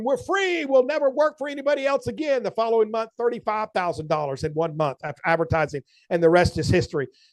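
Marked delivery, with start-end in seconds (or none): 0.0-2.4 high-pitched, jubilant, acted-out joyful shout. Retelling dancing around the house after a big month: imitating own past shout.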